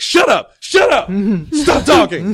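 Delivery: high, loud, drawn-out tearful yell. Retelling yelling at everyone in the room during the game's final scene: retelling a tearful yell. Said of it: "I start yelling at everybody, like tears in my eyes".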